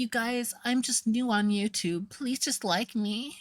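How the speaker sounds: very high, meek, timid little squeaky voice. Recalling how a YouTuber first presented herself, mimicking Amberlynn's meek little voice. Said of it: "pretending with a meek, timid little voice".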